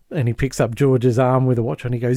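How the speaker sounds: ordinary delivery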